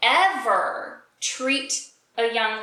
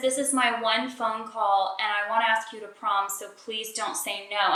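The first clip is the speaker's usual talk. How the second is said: normal talking voice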